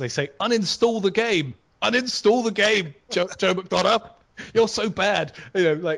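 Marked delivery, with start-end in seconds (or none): 0.4-5.3 upset, angry shouting. Retelling what an abusive player in World of Tanks says: imitating someone shouting. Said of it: "somebody starts shouting".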